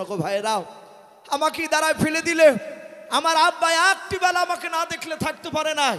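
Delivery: high, loud wailing, pleading cry.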